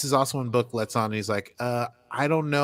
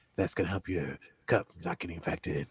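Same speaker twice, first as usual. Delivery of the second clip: deep, sultry voice; 6 semitones lower, 7 dB quieter than usual. Retelling a scene where Book appears shirtless: sexy Book voice. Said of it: "how I think sexy Book talks".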